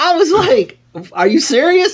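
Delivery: stunned, pitched-way-up disbelief.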